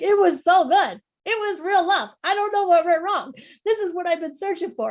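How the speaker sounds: mock talking through tears, sobbing, high and loud. Retelling walking a double stroller and talking to babies; imitating herself crying. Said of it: "just crying and talking to these 6-month-olds".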